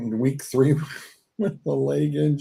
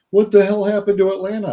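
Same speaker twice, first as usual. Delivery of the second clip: loud, high-pitched screaming outburst; 6 semitones higher, 5 dB louder than usual. Retelling how someone screamed about Atlanta: imitating Suds screaming. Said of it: "screaming at me going".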